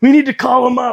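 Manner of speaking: high, loud mocking voice of a clueless fan.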